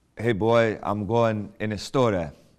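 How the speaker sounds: put-on funny, broken-English immigrant accent. Describing how his father still talks, the speaker quotes him: imitating father's accent. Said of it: "my parents' funny accents".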